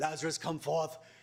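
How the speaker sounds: put-on stately, grand, theatrical British accent. Retelling the big line from a film scene, dramatic british accent. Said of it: "so in this great British accent".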